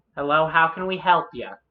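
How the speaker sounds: put-on young woman's voice. Describing a scene to a player who steps in; young dragonborn woman voice. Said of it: "There's a younger dragonborn woman who's like".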